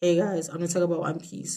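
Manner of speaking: low-energy, flat, deadpan monotone. Demonstrating their very flat general aura while introducing a topic: flat delivery. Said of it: "My general aura is very flat".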